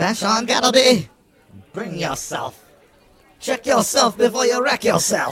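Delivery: put-on prickly elderly voice. Voicing a familiar figure calling from the front of the bar: prickly old voice. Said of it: "A prickly, old, familiar voice".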